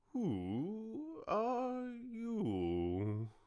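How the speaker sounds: languid, sleepy, drowsy drawl, drawn-out you. Narrator reads the Caterpillar finally addressing Alice, in a languid, sleepy voice. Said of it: "addressed her in a languid, sleepy voice".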